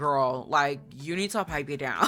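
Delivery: ordinary delivery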